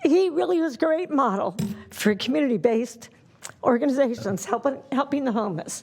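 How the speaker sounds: close to tears, choked-up, emotion breaking through. Speaking publicly about a very close friend, emotional and near tears. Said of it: "Sorry, it's very emotional".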